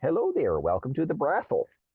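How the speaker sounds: thick put-on Minnesota accent, sing-song. Quoting a TikTok woman's opening line: imitating a heavy Minnesota accent. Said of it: "this heavy Minnesota accent".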